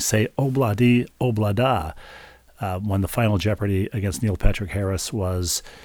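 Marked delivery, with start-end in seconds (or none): none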